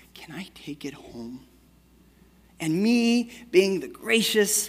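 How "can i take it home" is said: hushed, very soft, sweet, kind little voice. A father retells his daughter asking to take a stuffed animal home: imitating a kind, sweet little voice. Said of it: "in her kind, sweet little voice and says".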